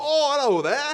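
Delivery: very high, very loud put-on English accent. Mocking how the other speaker greets anyone from England, in an English accent. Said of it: "time you come across somebody from England".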